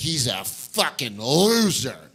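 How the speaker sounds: mock slurring, sounding blackout drunk. Retelling what blackout drunk dinner guests said: imitating blackout drunk people. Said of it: "They'd get blackout and be like".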